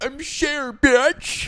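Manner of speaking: very high-pitched, very loud, belted-out delivery. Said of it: "my [name] impression".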